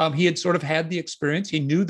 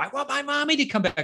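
acted child voice pleading, pitched up, rising, getting louder; 8 semitones higher than usual. Retelling a crying child's repeated demand: imitating a child getting louder. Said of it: "he kept getting louder".

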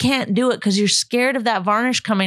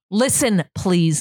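mock-bossy voice, much lower; 3 semitones lower than usual. In an argument, re-enacting how they asked someone to listen, retelling a bossy command. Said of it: "Like, you're the boss".

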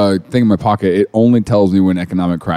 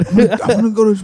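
put-on breathy voice, higher; 12 semitones higher than usual. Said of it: "really breathy for some reason".

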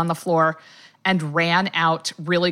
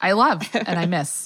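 ordinary talk

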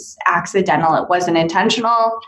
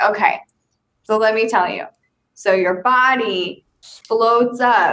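slow, deliberate, drawn-out delivery, "body" stretched out; 3 semitones higher than usual. Relaying what a spirit describes about his death: impersonating David. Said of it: "I'm trying to do my impersonation of him".

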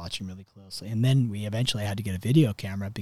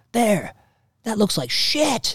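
very high-pitched, shrill, loud, blunt yell; 12 semitones higher, 6 dB louder than usual. Retelling his reaction while watching the video: imitating someone yelling. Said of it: "he yells".

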